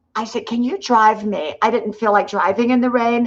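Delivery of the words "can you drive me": normal talking voice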